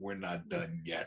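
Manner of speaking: put-on light Bronx accent, gangster style. Quoting a film villain's line, with a bit of a Bronx accent: Kylo Ren with a Bronx accent. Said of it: "he said it with a bit of a Bronx accent".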